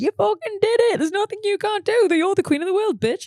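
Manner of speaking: acted, very high, buzzing, elated voice. Retelling Saturday night after performing, retelling a buzzing elated moment. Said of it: "I have this real, like, buzzing moment".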